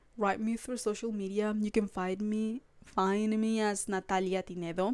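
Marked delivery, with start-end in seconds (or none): 3.9-5.0 strong Latin American Spanish pronunciation, lower and quieter.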